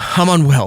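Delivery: mock emotional breakdown, overcome with emotion. Retelling a girl holding her phone out: imitating someone overcome with emotion. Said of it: "and she's just like".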